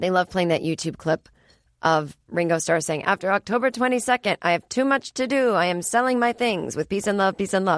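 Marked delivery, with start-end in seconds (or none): none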